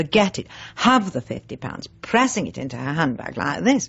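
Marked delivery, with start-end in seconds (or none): none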